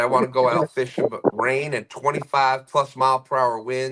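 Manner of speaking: ordinary talk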